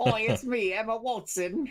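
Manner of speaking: put-on Cockney accent, very high and loud. Joking about Hermione's refined accent, the speaker plays the actress in a Cockney accent. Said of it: "somebody was using the Cockney voice".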